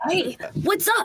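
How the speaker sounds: put-on acted cartoon boy voice. Acting out the put-on boy voice as Ash Ketchum. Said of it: "It's Ash Ketchum".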